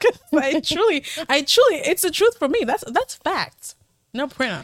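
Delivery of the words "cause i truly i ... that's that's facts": giggly, pitched-up talking, laughing through the words. Explaining a remark to another speaker, laughing while talking. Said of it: "I don't know why I'm laughing".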